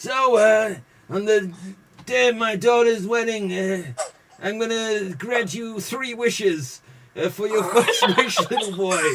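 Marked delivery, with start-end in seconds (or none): 1.1-9.0 put-on mumbling mob boss voice, pitched higher. Acting out a flashback after saying Marlon Brando spoke funny: imitating Marlon Brando's voice. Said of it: "he kinda spoke like this".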